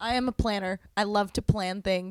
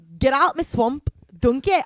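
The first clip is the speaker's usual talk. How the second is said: put-on slurring, boozy, drunken Scottish accent; 5 semitones higher, 7 dB louder than usual. Asked to do a Shrek impression before heading out, Shrek impression. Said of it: "I just do a really good Scottish".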